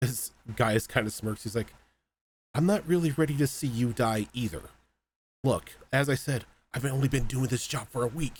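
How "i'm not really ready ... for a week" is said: whispered, higher. Voicing a character speaking to a wounded ally so nobody hears: whispering in character. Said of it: "he's whispering it to him so nobody else can hear it".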